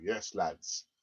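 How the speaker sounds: very deep, low, soft hushed undertone. Imagining a rich owner at a secret meeting, Stan Kroenke impression, not American. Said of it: "That's not an American accent, by the way".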